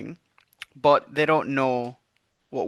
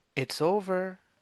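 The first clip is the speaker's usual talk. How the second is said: soft, high half-whisper with no voice; 6 semitones higher, 6 dB quieter than usual. A player voices her character, who has just appeared behind them, half-whispering. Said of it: "I'm just gonna whisper".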